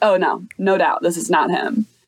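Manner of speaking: usual speaking voice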